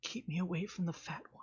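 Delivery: confiding, high, hushed whisper. A character, just after hugging another, whispers something to him, whispering. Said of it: "she whispers into Voldo".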